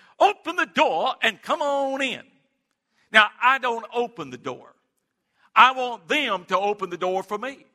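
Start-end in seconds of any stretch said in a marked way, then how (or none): 0.2-2.2 small, high little man's voice calling out. Recounting knocking on a door while canvassing with a deacon: high-pitched little man's voice. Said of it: "this little high-pitched man's voice".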